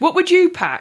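high, really aggressive, forceful voice. Asking the other speaker what they would pack: really aggressive. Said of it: "I just said that really aggressively".

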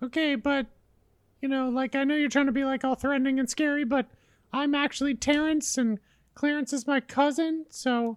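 soft, high-pitched character voice. In a role-play, the sentient bathroom door answers a threat in a talking-door voice. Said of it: "No one wants to talk to a sentient door while they're getting their dick out".

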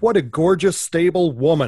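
joking, not serious.

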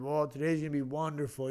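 mock, sarcastic cheerfulness. Retelling a passer-by's remark on his walk to work, imitating a sarcastic passer-by.

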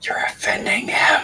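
hushed, very quiet whispered aside. Voicing a character warning another player that they're offending their host: whispering. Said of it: "Damien kind of whispers to Ari".

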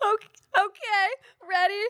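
mock very high sobbing, crying through the words. Retelling a crying girl at a cheer tryout, imitating someone sobbing. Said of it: "And just sobbing".

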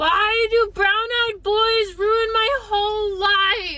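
loud yelling, shouting. Just after hitting the start button, asking the audience a question, yelling. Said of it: "Why are you yelling?".

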